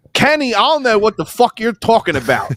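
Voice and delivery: laid-on New Jersey accent, pitched high. Describing a fantasy, the speaker voices April with a Jersey accent. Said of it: "with a Jersey accent".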